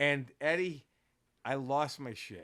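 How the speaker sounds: plain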